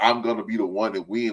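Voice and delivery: ordinary delivery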